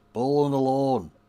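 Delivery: accent from Bradford. Showing how amazing the phrase sounds in this accent, say it in a Bradford accent. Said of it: "in a Bradford accent".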